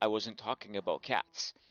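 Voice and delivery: play-acted bone-dry, flat deadpan delivery. Retelling the grandfather's reply to the uncle, acting out a deadpan delivery.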